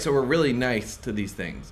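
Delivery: ordinary delivery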